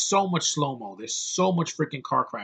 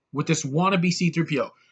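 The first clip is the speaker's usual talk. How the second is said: ordinary delivery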